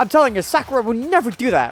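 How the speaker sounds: very high, shrill, full-throated shout. Voicing a character defending a friend: yelling in character. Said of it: "you don't have to yell".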